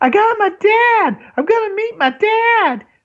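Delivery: super high, drawn-out, overjoyed yelling. Retelling a character yelling after learning he'll meet his dad: super high-pitched yell. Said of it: "he's got like a super high pitched voice when he yells".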